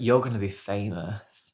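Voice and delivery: ordinary talk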